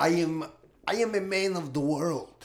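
put-on voice, dropped very low. Playing a guest welcomed onto a podcast: Alejandro Jodorowsky impression. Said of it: "You sound".

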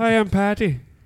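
very high, put-on Irish accent character voice. Introducing an Irish character to the group: put-on Irish accent. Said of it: "talk to my Irish character".

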